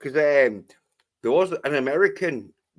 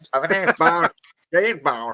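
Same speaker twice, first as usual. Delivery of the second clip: put-on Australian accent, pitched higher; 3 semitones higher than usual. Imagining how an actor would deliver a film line: Lazenby impression. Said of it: "Lazenby would have been like".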